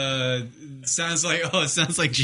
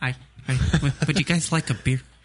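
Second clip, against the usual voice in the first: soft-spoken put-on man's voice. Imitating a guy offering the others a beer: soft-spoken Sarcastic Prick impression. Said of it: "Soft spoken".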